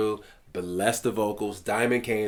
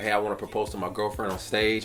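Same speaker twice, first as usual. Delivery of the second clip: plain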